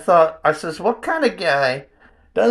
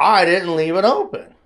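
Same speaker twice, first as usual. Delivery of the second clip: plain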